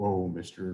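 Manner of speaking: low, soft voice of a cow. Telling a story, the cow replies to the mouse in a cow voice. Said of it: "that's what the cow would sound like".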